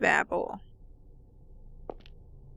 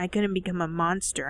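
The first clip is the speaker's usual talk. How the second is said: ordinary delivery, nothing marked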